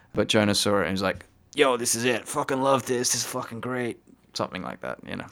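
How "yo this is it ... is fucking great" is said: bad, sloppy, inarticulate, crude put-on voice. Retelling how Jonah reacted to a render: bad impersonation of Jonah. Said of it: "bad impersonation of him".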